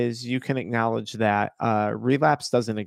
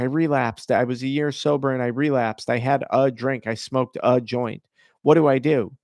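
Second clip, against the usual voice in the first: ordinary talk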